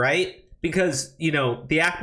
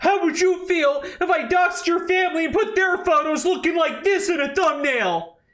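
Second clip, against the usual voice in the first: put-on whining, very high-pitched complaining tone; 12 semitones higher than usual. Retelling what a YouTuber said about doxing: imitating someone whining. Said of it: "he sounds like a whiny bitch".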